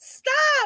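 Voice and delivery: frantic, desperate, high-pitched shout.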